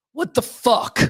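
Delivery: furious, very angry outburst. Telling a story about Lucas talking in his sleep, imitating his very angry voice. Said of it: "in a very angry voice".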